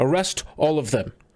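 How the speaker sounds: regal, high, commanding voice. Game master voices a commander marching up to the players: shouting a command. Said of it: "he is marching up and just shouts".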